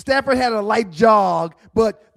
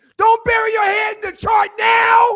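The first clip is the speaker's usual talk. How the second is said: play-acted, very high, shrill, all-out screaming; 12 semitones higher, 4 dB louder than usual. Retelling a reaction to a coach on tv: imitating a scream. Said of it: "I started screaming".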